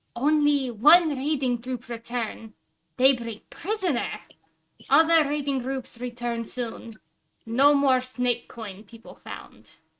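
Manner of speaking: loud goblin voice, choppy broken speech. Narrating a scene where a goblin reports to a cloaked figure; goblin voice, broken Common. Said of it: "like a little bit broken common".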